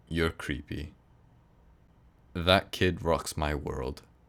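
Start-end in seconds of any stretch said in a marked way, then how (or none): 0.1-0.9 acted, bone-dry, expressionless, totally flat deadpan delivery. Parent retelling their daughter's reply after a pause, retelling a deadpan reply. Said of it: "totally deadpan".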